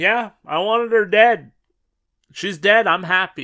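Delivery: put-on very loud, cute, sweet, innocent little-girl voice. Retelling what a girl said in front of her mom, in a mock cute innocent voice. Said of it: "in this cute little innocent voice".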